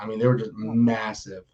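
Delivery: plain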